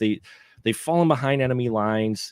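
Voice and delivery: plain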